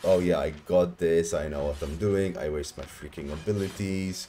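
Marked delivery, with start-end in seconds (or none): none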